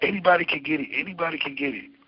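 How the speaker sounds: toned-down acted yell, said twice. Recounting a man who came out of nowhere: retelling a yell. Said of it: "he comes out and he yells".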